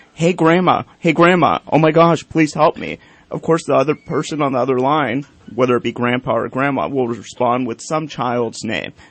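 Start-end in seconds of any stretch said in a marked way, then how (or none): 0.2-3.0 mock urgent, frantic, panicked voice. Explaining a phone scam, act out the caller's plea, imitating a frantic caller. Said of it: "in a frantic voice says".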